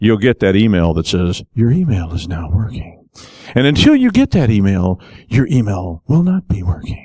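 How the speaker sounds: forced calm, quiet menace, swooping pitch. Acting out a reply to someone whose email still isn't working, in put-on calm, menacing voice. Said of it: "You have to keep that calm voice. That sounds like you might kill them".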